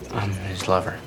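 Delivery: embarrassed, self-conscious, soft and sheepish. Quoting a line they disliked, the speaker is mimicking a sheepish reply. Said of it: "He said it like so sheepishly".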